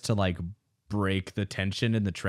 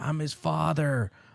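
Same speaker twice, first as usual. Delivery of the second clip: mock, high screaming yell; 7 semitones higher than usual. Retelling a film scene where a character gets cut off: imitating someone screaming. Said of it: "he starts screaming".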